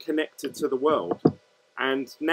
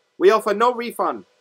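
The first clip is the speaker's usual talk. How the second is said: bad put-on Chinese accent, high and loud; 7 semitones higher, 6 dB louder than usual. Pretending to be the seller answering about a refund, in a bad Chinese accent impression. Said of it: "that's a bad Chinese impression".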